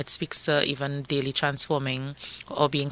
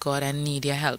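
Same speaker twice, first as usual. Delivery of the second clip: ordinary talk, nothing marked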